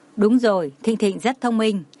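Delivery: ordinary delivery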